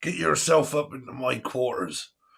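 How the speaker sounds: talking like a pirate. Waiting for people to join, the speaker talks like a pirate. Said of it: "I don't know why I'm talking like a pirate".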